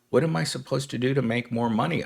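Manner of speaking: mock-terrified voice, put-on terror. Describing sad workers, voicing one of them: imitating a terrified worker. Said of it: "you almost like can hear the terror in their voice".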